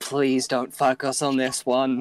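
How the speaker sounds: muttered quietly under the breath. Voicing a character who mutters to Thaxando before the assault: muttering a prayer. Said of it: "gonna just kind of mutter to Thaxando".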